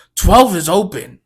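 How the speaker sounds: put-on very loud, high, pissed-off call, all attitude. Retelling how an impatient man spoke to another customer: imitating a pissed-off tone. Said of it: "all attitude, like, pissed off".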